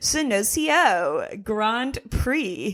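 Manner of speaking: synthetic-sounding computer assistant voice. Trying to pronounce a Grand Prix name on the show: Siri voice. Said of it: "Do I sound like one of those A I voices?".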